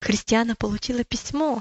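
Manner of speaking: ordinary talk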